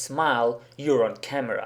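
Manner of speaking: ordinary talk, nothing marked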